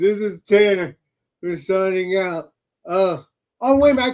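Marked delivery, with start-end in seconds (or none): 0.0-2.5 put-on sleepy, half-asleep drunk voice. Mimicking the other speaker closing a show half asleep: imitating Tanner signing off half asleep. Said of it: "I'm not trying to make fun of you".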